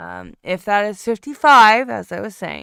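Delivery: yelling.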